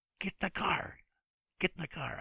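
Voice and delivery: very high-pitched, shrill shouting. Retelling telling someone to get in the car: imitating his own shout. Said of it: "I yell at her".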